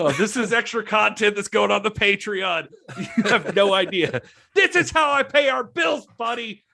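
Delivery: high, loud, defensive tone.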